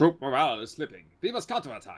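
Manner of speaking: put-on German accent. Asked to read the troop report again in German, the speaker uses a Hans voice. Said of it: "You need to read it out again, but in German".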